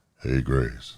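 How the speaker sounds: very low, deep, soft, hushed godlike voice. Pretending to be god calling out to someone: low voice. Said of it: "I could do the low voice".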